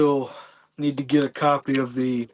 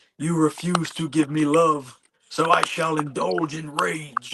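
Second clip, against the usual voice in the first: put-on classic movie monster voice; 2 semitones higher than usual. Quoting a line from the new Frankenstein film, Frankenstein's monster voice. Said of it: "I like the monster's voice in it".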